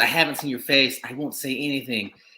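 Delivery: mock earnest, imploring, begging voice. Retelling a movie scene where the heroine begs the killer: imitating someone pleading. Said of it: "she's pleading".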